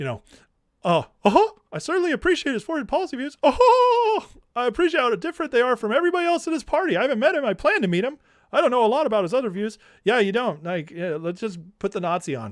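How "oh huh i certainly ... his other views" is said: very high, squeaky, condescending mouse voice, stretched "Oh". Speaker mimicking how Tucker talks about another man: mock-condescending Tucker impression. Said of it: "Mickey Mouse with arrogance and condescension and just a slightly lower octave".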